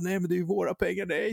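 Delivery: panicked pleading voice, high-pitched and fast.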